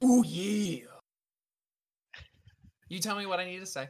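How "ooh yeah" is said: very loud, strange, booming, belted voice. Voicing a strange voice heard in battle: Macho Man Randy Savage voice. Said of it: "a strange voice sounding similar to Macho Man Randy Savage himself".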